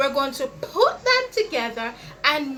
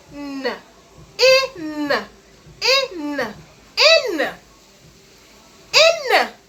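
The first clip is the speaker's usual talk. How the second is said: very slow, stretched, drawn-out sounding of in; 5 dB louder than usual. Speaker sounds out a word for listeners: stretched-out sounds. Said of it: "So when we make the word".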